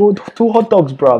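put-on English accent with some London slang, pitched high. Copying another speaker's accent impression of customers, imitating an accent, sounding English. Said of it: "that was a bit English".

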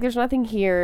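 ordinary talk

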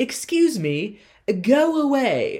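acted out, snooty, haughty, very high and slow. Retelling how Margaret sends the man playing music away: snooty, direct Margaret voice. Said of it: "In a very, snooty, but just very direct way".

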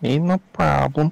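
put-on, high-pitched Eastern European accent. Answering someone in a put-on bit that makes a listener ask about it, Borat voice. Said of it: "Why do you sound like Borat?".

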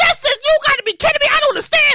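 put-on, acted, high-pitched screaming. Speaker acts out a caller on the phone with customer service, imitating someone screaming. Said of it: "And you start screaming".

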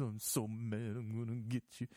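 quavering, trembling, overwrought fake-dramatic delivery. Mocking a wrestler's overacted drama scenes: imitating a trembling voice. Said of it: "the voice starts trembling".

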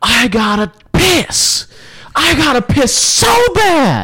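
mock shrill, very high, long-drawn, climbing scream. Speaker acting out their own past self screaming, retelling a scream. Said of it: "because I'm screaming".

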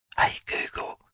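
whispering. Giving an example command to smart speakers: whispering. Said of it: "I'm gonna whisper it".

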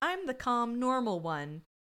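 normal talking voice

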